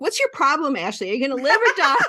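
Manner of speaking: put-on shouting.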